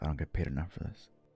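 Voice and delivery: soft mutter under the breath, kept to oneself. Voicing a frustrated man after being asked about shamans, muttering under his breath. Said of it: "mutter under his breath".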